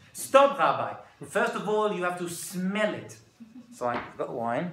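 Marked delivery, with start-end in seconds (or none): 0.1-3.1 put-on woman's Israeli accent. Retelling an Israeli woman stopping a rabbi from drinking his wine; put-on Israeli accent. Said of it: "here's my Israeli accent".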